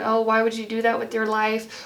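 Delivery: ordinary delivery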